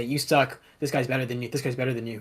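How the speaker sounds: ordinary delivery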